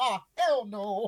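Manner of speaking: high, mock spooked, startled outcry. Speaker retelling being attacked by something in a cave: retelling being scared. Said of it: "And I got real scared".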